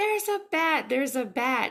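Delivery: mock, very high, full-lung, all-out screaming shriek. Speaker retells a pregnant woman in the bathroom, imitating someone screaming. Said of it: "She just starts screaming at the top of her lungs".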